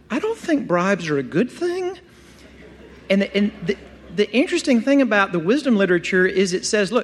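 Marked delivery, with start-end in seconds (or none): 0.1-2.0 high, swooping, sing-song, hypersensitive touchy voice. Imagining that voice reacting to a proverb on bribes: hypersensitive Jim Gaffigan voice. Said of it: "that kind of hypersensitive Jim Gaffigan voice".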